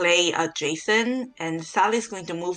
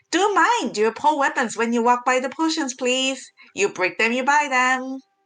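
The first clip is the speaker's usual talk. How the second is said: bright, cheerful, high shopkeeper voice; 6 semitones higher than usual. Voicing a halfling guard greeting customers at a potion shop: cheerful voice. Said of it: "She waves and says in a cheerful voice".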